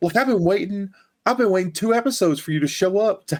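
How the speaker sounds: put-on, very high-pitched, complaining yell. Recounting a character showing up late in a show, retelling yelling at the TV. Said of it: "And I'm yelling at the T V".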